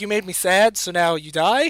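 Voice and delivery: ordinary delivery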